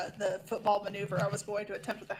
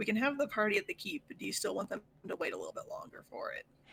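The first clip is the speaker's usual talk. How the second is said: gentle, discreet, private-sounding tone. Leaning down to ask a character something in character, asking really quietly. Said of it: "ask her really quietly".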